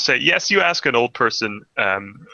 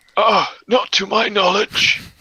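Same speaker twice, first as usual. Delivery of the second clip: put-on old voice, much higher; 9 semitones higher than usual. Voicing one of the old people answering a question about a witch, old person voice. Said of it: "We need to put on an old person voice".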